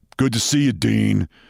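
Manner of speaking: put-on low, deep New York accent, jock voice. Retelling what a jock said to him at the door, deep New York accent. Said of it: "the jock says to me in a deep voice, New York accent".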